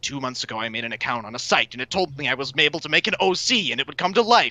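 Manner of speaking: rapid-fire, super speedy anime narrator delivery. Starting a story in super speedy anime narration mode. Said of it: "I'm gonna say this in like super speedy anime narration mode".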